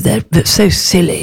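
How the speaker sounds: plummy, creaking rustic voice.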